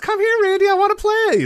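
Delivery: put-on very high-pitched childlike voice. Retelling a wrestling segment, quoting her call to Randy: Alexa Bliss childlike voice. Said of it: "skips and goes".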